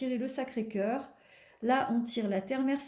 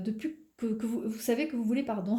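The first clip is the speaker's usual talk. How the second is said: stammering and stuttering, tripping over words. Addressing the listener directly about their life, stuttering. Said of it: "excusez-moi, je bégaye".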